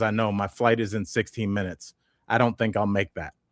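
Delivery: flat, deadpan put-on delivery. Retelling what a man in the airport line told staff, imitating a deadpan reply. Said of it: "he was so deadpanned".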